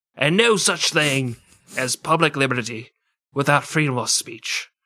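put-on Australian accent drifting into an Irish accent. Quoting Franklin writing as Silence Dogood, the speaker's accent slips into Irish. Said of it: "I think I went Irish at the end".

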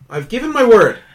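loud, high, desperate pleading insistence. Voicing a captured fey creature begging for release: getting desperate. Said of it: "you can tell now he's getting desperate".

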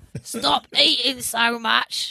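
put-on crone-like old witch voice. Repeating the other speaker's attempted English line, the speaker uses an old witch voice. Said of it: "Like an old witch".

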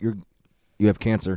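acted, stoic, flat, unchanging deadpan delivery. Imitating a stoic character giving a diagnosis: imitating a stoic deadpan doctor. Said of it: "he'd look exactly the same".

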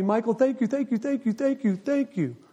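put-on heavy Russian accent, laid on thick. Retelling a phone call from a man from Russia: thick Russian accent. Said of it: "He's still got the thick accent".

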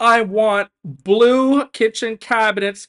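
bossy dictator yell, high, loud and slow.

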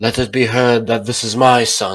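proud voice, full of pride. Reading the narrator's mother's line about him, said proudly. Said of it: "my mother said proudly".

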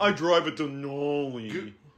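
slow, smug rich-guy voice. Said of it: "is like a smug rich guy shit".

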